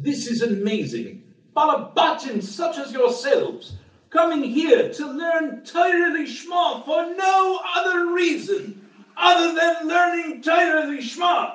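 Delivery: put-on rough English accent, pitched very high. Retelling a rabbi's speech from 30 years ago, as Rav Matisyahu Salomon, in a not-so-good English accent. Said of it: "I don't do a good English accent, but I'll try".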